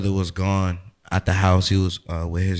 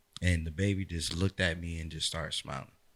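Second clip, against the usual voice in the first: normal talking voice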